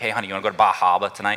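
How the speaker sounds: put-on Massachusetts accent. The speaker shows how they like to say Bar Harbor, Massachusetts accent. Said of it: "I kind of like to say in a Massachusetts accent".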